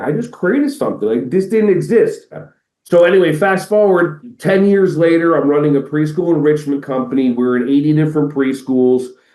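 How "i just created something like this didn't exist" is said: put-on, overwhelmed, high, swooping tearful amazement. Retelling making a deposit for a new school, imitating own past crying. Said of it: "I'm crying, going like".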